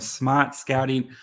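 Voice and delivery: leaning into a put-on Boston accent. Introducing a guest's outlet name in a put-on boston accent. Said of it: "I really tried to lean into the box, Boston accent with it".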